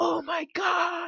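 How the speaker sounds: held-back, hushed, very high shriek of excitement. Caster hours into casting, reacting to the game, screaming in a soft voice. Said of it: "I'm screaming like in my soft voice".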